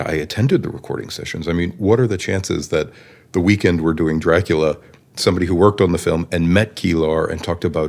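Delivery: ordinary delivery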